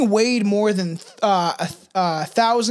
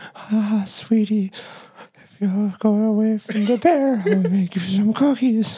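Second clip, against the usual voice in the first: put-on creepy elderly woman voice. Asked to voice an old woman talking to a girl near a bear, creepy old woman voice. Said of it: "Can you want to do an old woman voice?".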